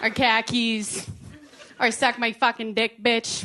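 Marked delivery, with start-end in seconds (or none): 1.9-3.5 strong Boston accent. Showing which words bring out the accent: thick Boston accent. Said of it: "You can't really hear it from my accent unless I say certain words".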